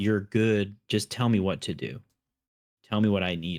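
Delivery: ordinary delivery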